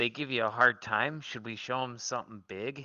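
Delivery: whispering. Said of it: "I'm gonna whisper in Nenny's ear".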